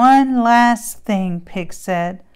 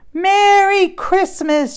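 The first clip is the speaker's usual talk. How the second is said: high-pitched voices shouting out together; 9 semitones higher than usual. Narrator reading the farm animals greeting Cow as she marches out, shouted. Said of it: "shouted the animals".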